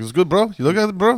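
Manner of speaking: chummy, friendly, very high-pitched, loud Cuban voice. Retelling what the Uber driver kept saying: imitating a Cuban Uber driver. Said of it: "He was a Cubano or something. He's like".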